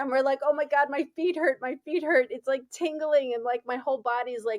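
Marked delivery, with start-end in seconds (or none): 0.4-2.3 put-on panicked screaming, higher. Retelling hitting a dead animal while driving, imitating a panicked scream. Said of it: "my daughter and I start screaming".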